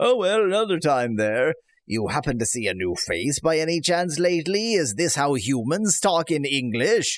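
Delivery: put-on pirate voice. Voicing Valnar while reading game dialogue: Valnar pirate voice. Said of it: "trying to give him a, uh, piratical voice".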